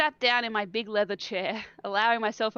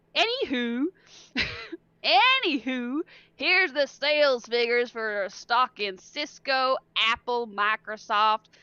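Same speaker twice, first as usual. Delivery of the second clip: sudden, put-on Southern American accent; 3 semitones higher, 3 dB louder than usual. Reading a man who tosses papers onto the narrator's desk, in a Southern accent. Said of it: "I don't know why he got Southern".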